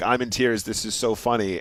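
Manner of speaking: usual speaking voice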